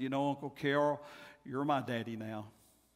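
tender, soft tone. Retelling words said to an uncle after a funeral: recalled tender line. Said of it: "as tenderly as I could".

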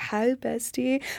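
sultry, sexy, seductive tone. Retelling how the other speaker greeted them from bed: imitating a sexy tone. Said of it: "the tone was very sexy".

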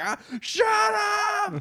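very high scream with up drawn out. Retelling a scene where Homer screams out the window: imitating Homer Simpson screaming. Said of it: "screaming out the window at him".

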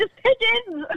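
put-on excited screaming. Speaker recounting spotting two pigeons, retelling her excited screaming. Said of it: "I just kept screaming".

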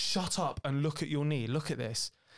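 usual speaking voice

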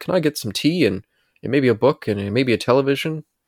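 put-on British accent. Retelling a character's joking request from an episode: fake British Alfred impersonation. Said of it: "did a little Alfred impersonation".

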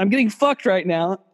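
ordinary delivery

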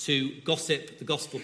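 ordinary delivery

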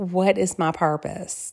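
very soft, hushed, barely-there voice. Retelling what mothers of older children ask: imitating a very quiet voice. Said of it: "in a very quiet voice say".

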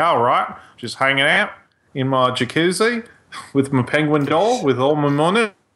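put-on chilled-out Australian accent. Imitating how a rich, chilled-out Australian would sound: imitating an Australian. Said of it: "'cause he's Australian, his voice would be like".

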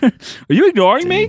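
very high, loud confronting tone. Acting out a parent's words, in a dad impression. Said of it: "my dad impression".

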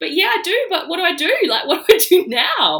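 very high, very loud hysterical sobbing fit. Recalling a phone call to a cousin about the pregnancy: retelling hysterical sobbing. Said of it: "I was hysterical crying".

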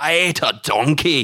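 bad, heavily laid-on put-on Scottish accent, very slow. Discussing a film, the speaker quotes an actor's line in a bad Shrek-voice Scottish accent. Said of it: "he's doing the Shrek voice because that's he just is doing like a bad Scottish accent".

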